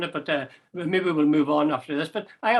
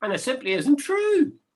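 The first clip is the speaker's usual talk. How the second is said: high voice rising at the end on "true". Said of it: "the way my voice went up at the end there".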